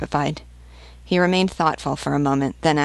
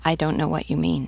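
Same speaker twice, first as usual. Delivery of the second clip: plain reading voice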